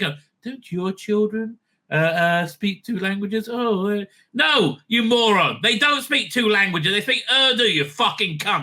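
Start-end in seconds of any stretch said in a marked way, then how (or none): 0.0-3.5 mock sanctimonious, disingenuous tone, pitched higher. Act out someone asking whether your children speak two languages, mock-sanctimonious and disingenuous. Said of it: "disingenuous dripping with uh, sanctimony".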